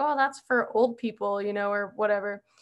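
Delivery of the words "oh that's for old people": usual speaking voice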